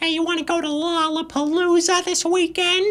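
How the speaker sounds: very high-pitched cartoon character voice. Having no joke for a headline, the speaker slips into a Carl Wheezer voice. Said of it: "in the voice of Carl Wheezer".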